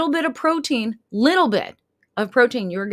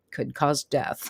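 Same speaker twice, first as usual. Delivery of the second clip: whispered, hushed, breathy small-print announcer voice; 8 semitones lower, 8 dB quieter than usual. Imitating the small print in drug commercials: commercial voice lowering. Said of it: "their voice lowers".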